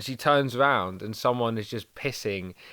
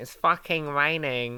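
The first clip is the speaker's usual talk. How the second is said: deliberately awful, horrible, mocking girl voice; 4 semitones higher than usual. Quoting the girl mates one sunday morning, in a horrible put-on voice mocking them. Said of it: "I'm doing a horrible voice for them".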